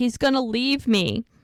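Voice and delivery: freaked-out, desperate, frantic panicked cry. Retelling a pregnant woman's emergency call, imitating Charmaine's frantic panic. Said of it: "Charmaine is freaking out".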